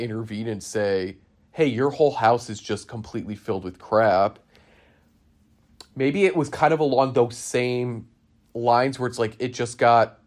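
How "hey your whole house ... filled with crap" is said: ordinary talk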